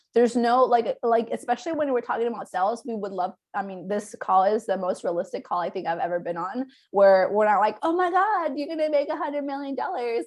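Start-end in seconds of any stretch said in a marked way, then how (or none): 7.8-10.3 high, put-on young woman voice.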